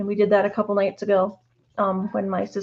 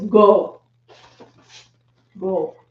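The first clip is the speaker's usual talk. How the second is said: harsh, mean voice, louder; 7 dB louder than usual. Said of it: "Do I have to use my mean voice?".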